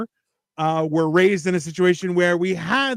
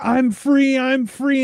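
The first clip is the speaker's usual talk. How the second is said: put-on high, stretched-out, drawn-out yelling shout; 7 semitones higher than usual. Describing a video where a woman gets a call from her lawyer; retelling a woman yelling. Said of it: "and she's yelling".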